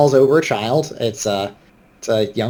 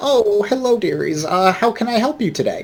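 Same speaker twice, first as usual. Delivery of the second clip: put-on older woman voice, much higher; 8 semitones higher than usual. Storyteller voicing the older woman who runs the place: older woman voice. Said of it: "The management is an older woman".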